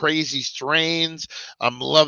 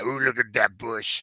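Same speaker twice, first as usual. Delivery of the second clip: put-on sleazy seventies guy voice, lower and quieter; 3 semitones lower, 6 dB quieter than usual. Speaker jokes about sounding dirty, then does a seventies dirty guy voice. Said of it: "Sound like a seventies dirty guy".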